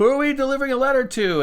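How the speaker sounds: very high, fast yell. A man at a private dock answers the captain, yelling back. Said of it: "he yells back at the".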